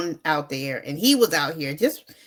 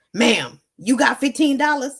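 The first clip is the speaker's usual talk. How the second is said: loud, raspy voice of a big man; 6 semitones higher, 5 dB louder than usual. Retelling a man who came into the wash house, in a raspy big-man voice. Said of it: "a big man, raspy voice".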